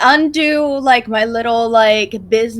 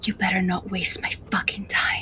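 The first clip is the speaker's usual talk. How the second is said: very quiet, hushed, barely voiced whisper; 4 semitones lower, 12 dB quieter than usual. Playing a character, whispering to whoever was talking: whisper. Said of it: "I'm gonna whisper".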